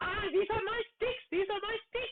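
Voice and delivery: very high-pitched, excited, thrilled squealing goblin voice. Voicing the goblin Yumik as everyone sits with kebabs, in an excited Yumik goblin voice. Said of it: "Yumik kind of excitedly jumps up and down. And he's like".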